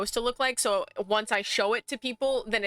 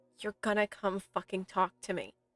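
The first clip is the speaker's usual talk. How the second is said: soft mutter under the breath; 2 semitones lower, 5 dB quieter than usual. A player, eyes closed and focusing, speaks their character's words, muttering under the breath. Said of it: "quite literally start like under my breath".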